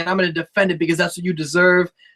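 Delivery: ordinary delivery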